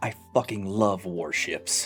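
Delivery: low, quiet whisper. Storyteller voices the Morrigan as the player walks away, whispering under her breath. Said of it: "whisper under her breath".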